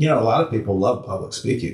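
wry, dry, tongue-in-cheek sarcastic delivery. Commenting on public speaking to others in the talk: sarcastic. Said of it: "you're being sarcastic".

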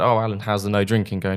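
ordinary delivery

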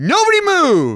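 shrill, very high-pitched, loud shout. Retelling a robbery attempt in a store: imitating a man shouting. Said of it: "he shouts in the middle of the store".

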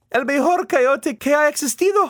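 very high, loud burst of exclaiming. One speaker talks with another about the pup, exclaiming. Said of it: "Rosa exclaims".

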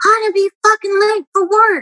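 put-on very high, shrill screaming. Recalling a ride to the hospital, imitating the driver screaming. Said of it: "he was screaming at me".

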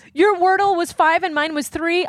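high, sarcastic fake sympathy.

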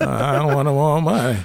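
put-on voice on the verge of crying. Imitating Terrence Howard turning down money: Terrence Howard impression, about to cry. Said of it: "He always sound like he about to cry".

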